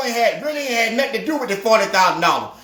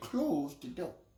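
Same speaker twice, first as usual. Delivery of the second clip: put-on grave, quiet, very serious, low voice; 7 semitones lower, 20 dB quieter than usual. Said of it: "he had a very serious tone on him".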